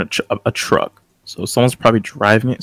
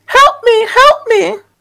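shrill, very high, very loud screaming; 8 dB louder than usual. Karen, trapped in a truck with the others, calls out: screaming for help. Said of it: "Karen starts screaming".

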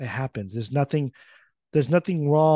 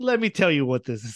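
snide, condescending, sarcastic know-it-all tone. Imagining Joseph speaking in the lecture: imitating Joseph sarcastically. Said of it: "kinda like that sarcastic".

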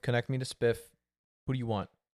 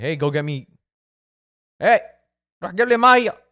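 put-on Egyptian Arabic accent, yelling, higher and louder; 5 semitones higher, 12 dB louder than usual. Imagining people yelling orders at a player off the plane: put-on egyptian arabic accent, yelling. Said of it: "they're just gonna yell at him and be like".

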